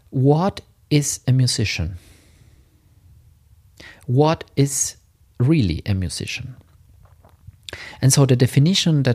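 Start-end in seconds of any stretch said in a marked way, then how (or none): 0.1-6.5 slow, carefully spaced, weighty delivery. Podcast host poses an important question to listeners, said slowly. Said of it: "I'm going to say it slow".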